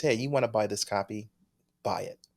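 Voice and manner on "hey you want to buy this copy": usual speaking voice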